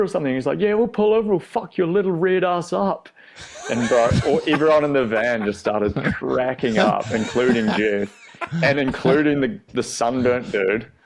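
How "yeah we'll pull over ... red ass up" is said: yelling.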